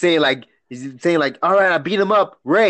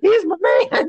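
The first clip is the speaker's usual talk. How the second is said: put-on woman's voice, pitched very high; 13 semitones higher than usual. Acting out a daughter defending her boyfriend to her father: impression of a lady. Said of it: "impression of a lady right there".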